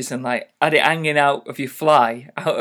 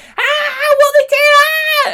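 put-on very high, drawn-out shrieking of a group of girls; 4 dB louder than usual. Retelling Girl Guides reacting as boys ran through camp: imitating girls screaming. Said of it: "they were all screaming".

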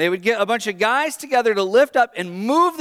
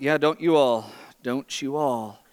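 put-on mutter under breath, lower and quieter; 8 semitones lower, 5 dB quieter than usual. Retelling a leader's remark to a group: imitating someone muttering under their breath. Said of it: "under their breath goes".

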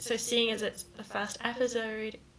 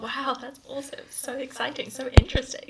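sarcastic, mock-bored, mock-interested tone; 2 semitones higher, 6 dB louder than usual. Teasing someone whose talk was heard before, sarcastic and mock-bored. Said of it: "mock-bored reaction to hearing it before".

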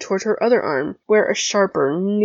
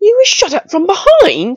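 very high, very loud, shrill, outraged exclamation; 12 semitones higher, 9 dB louder than usual. Reading a story aloud, the narrator voices a character's outraged exclamation. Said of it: "Draco exclaimed in outrage".

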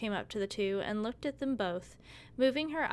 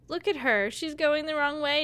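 mocking, loud, high-pitched teasing; 6 semitones higher, 7 dB louder than usual. Girls circling a blindfolded girl tease her, teasing. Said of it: "they teased".

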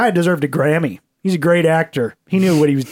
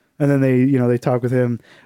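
ordinary talk

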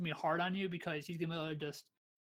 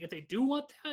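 voice breaking mid-phrase, cracking upward; 8 semitones higher than usual. Analyzing a team's draft picks, voice cracking mid-sentence. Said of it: "sorry, my voice cracked".

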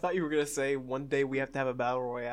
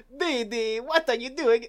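put-on very high, loud Italian accent; 10 semitones higher, 5 dB louder than usual. Urged by the others to do it, the speaker delivers the line: Dexter voice. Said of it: "He's Italian!".

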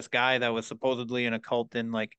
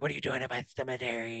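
mock hissing voice, much quieter; 6 dB quieter than usual. Retelling a strange man confronting them in a cemetery, imitating a hissing voice. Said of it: "and he's hissing".

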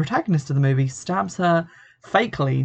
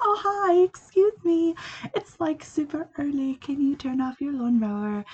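very high, sweet, polite nice-lady voice; 11 semitones higher, 4 dB quieter than usual. Retelling a film scene, the neighbour asked about the lawnmower: imitating a polite, nice lady. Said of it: "a polite, nice little blonde lady going".

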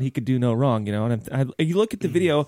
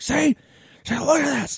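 very high, play-acted angry, pissed-off outburst; 11 semitones higher than usual. Retelling how Brian reacted online: imitating Brian pissed off. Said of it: "He was so pissed off about this".

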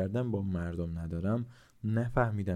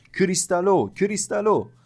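piercing yell, very high and very loud; 11 semitones higher, 9 dB louder than usual. The narrator leans close to the weeping grandmother, shouting into her ear. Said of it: "زیر گوشش فریاد زدم".

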